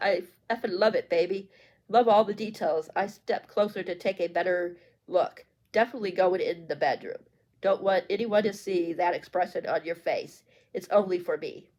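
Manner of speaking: ordinary talk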